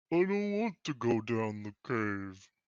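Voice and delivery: heavy, big-sounding, large voice. Player speaks in character during the game, large loud voice. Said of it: "says a large, loud voice in common".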